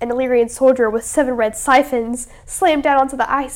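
plain

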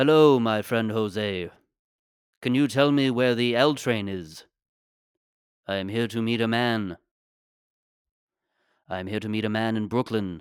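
put-on elderly English man voice. Improvising a bit about Obi-Wan Kenobi lost in the Bronx: Obi-Wan Kenobi voice. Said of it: "It's just Obi-Wan Kenobi in the Bronx".

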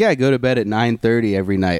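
ordinary talk

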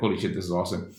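ordinary delivery

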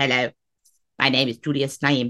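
flat, slow, stiff robotic voice. Imitating how he sounds on his voice notes, in Julius Naim robotic voice. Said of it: "he sounds like this".

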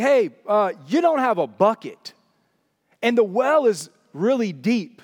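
dry, snarky, sarcastic, play-acted retort. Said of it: "her snarkiness".

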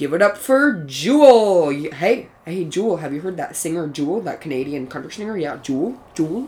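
teacher voice, announcing. Retelling how Mister Wagner greeted the speaker in class: imitating Mister Wagner. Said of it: "and he would go".

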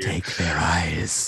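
low, snake-like voice. Quoting a villain's order from the episode: snake-like Vanek voice. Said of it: "like a snake talking to you".

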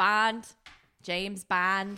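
put-on Canadian accent. In a movie-quote game, a co-host repeats the quote in a Canadian accent. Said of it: "In a Canadian accent".

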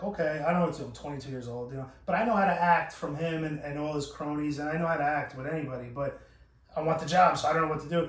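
ordinary talk

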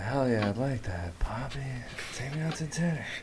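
softest possible, low-key voice. Retelling another speaker's reply to tease them: imitating a very soft reply. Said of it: "That was the softest hell yeah ever".

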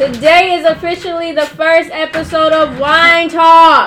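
loud, robotic shouting voice. Opening the first episode of wine talks: yelling like a robot. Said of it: "now we're yelling like a".

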